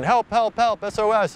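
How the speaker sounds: very high-pitched, yelled cries.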